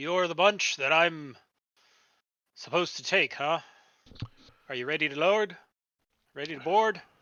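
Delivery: dour, grim, humorless, no-nonsense voice. Storyteller voicing a man who sends his daughter off, then addresses the listeners: loud, booming voice. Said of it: "He's got a loud, booming voice".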